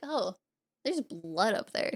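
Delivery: put-on uninterested voice. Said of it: "the most, like, uninterested look".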